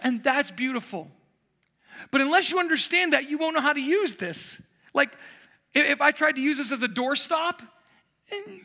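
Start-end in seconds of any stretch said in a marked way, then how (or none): none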